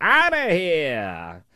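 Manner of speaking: put-on high, drawn-out, old-timey ballpark announcer call. Speaker repeating her parting words to him, old-timey baseball announcer voice. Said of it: "She said it like an old-timey baseball announcer".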